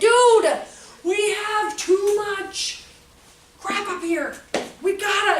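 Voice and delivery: mock sarcastic tone, high-pitched and slow. Retelling a remark to a son at home: imitating own sarcastic remark. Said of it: "I was trying to use sarcasm".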